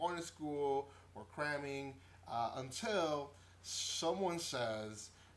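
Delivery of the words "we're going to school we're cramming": ordinary delivery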